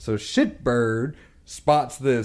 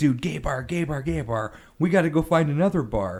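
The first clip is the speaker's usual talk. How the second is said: hushed stage half-whisper; 2 semitones higher, 3 dB quieter than usual. Retelling how a friend half-whispered in his ear at a bar: imitating someone half-whispering. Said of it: "he's whispering in my ear".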